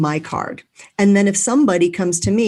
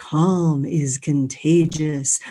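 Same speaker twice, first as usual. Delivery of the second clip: lowered, deep radio announcer voice; 3 semitones lower than usual. Repeating a line after thanking Cheryl, in a lowered radio voice. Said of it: "I lowered my voice. ... I used my radio voice".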